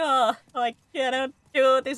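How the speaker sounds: mock crying breakdown voice, high, drawn-out fake sob. Picturing giving up on a hard game: mock crying. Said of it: "I start crying".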